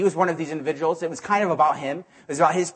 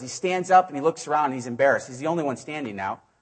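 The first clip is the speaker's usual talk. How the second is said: normal talking voice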